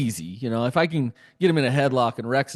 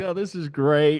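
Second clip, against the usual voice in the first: put-on laugh, pitched higher; 3 semitones higher than usual. Retelling watching a brothers' fight, imitating own past self laughing. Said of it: "I was just laughing, like".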